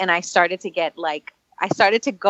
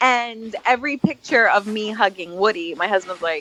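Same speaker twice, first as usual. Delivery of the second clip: ordinary talk, nothing marked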